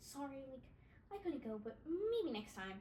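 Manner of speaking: deliberately stupid-sounding dopey voice, swooping and slow. Retelling his message about missing the party, imitating him sounding stupid. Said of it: "so make him sound stupid".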